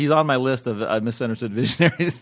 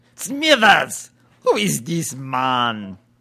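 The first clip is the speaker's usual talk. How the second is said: put-on slow, dragged-out, swooping German accent. Show the new voice you introduced by accident, Mr. Burns in a German accent. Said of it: "The German Mr. Burns".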